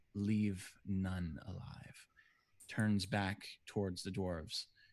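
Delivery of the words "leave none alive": menacing, threatening, commanding tone. Voicing a guard who orders the attack: menacing order. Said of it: "a menacing smile crosses, uh, Damokos's face".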